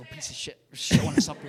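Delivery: hushed, breathy whisper under the breath. Whispering an insult to the skull they are holding: whispering. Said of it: "I have to, like, whisper to him".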